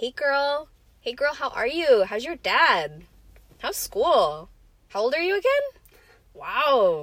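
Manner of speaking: put-on West Texas accent, "wow" drawn out. Speaker imitates aunts from Texas on every phone call, in their Texas accent. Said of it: "My impression of a Texas accent is just my aunts from Texas".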